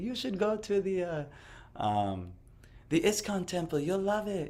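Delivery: man's really high, high-pitched voice. Retelling what a man he used to visit told him, imitating a high-pitched voice. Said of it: "he had a really like high pitched voice".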